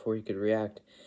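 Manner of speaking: plain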